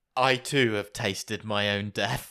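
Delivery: eerie delivery. Retelling a character's line about tasting his own death: imitating a creepy line. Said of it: "even more creepily".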